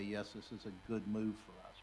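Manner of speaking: ordinary talk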